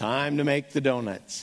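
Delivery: flat, low, joyless voice with zero enthusiasm. Recalling an old commercial, the speaker quotes the guy getting out of bed: mock-unenthusiastic Dunkin' Donuts guy. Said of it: "he says it with about that much enthusiasm".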